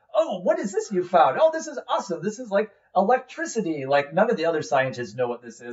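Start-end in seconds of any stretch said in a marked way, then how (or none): 0.1-3.8 excited, high, sing-song, marveling gushing. Retelling a scene where Pops, a prisoner in the fort, finds something; imitating excited Pops. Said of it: "he's all excited and going".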